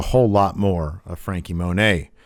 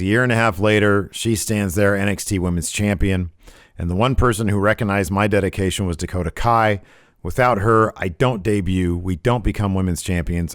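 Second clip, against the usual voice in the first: normal talking voice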